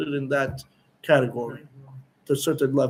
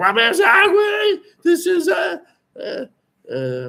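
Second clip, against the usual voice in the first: put-on excited scream, higher and louder; 5 dB louder than usual. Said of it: "he started screaming".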